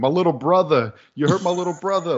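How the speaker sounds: put-on heavy New York accent. Recapping a scene, quoting Bubba in Bubba's New York accent. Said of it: "he was very pushing the New York".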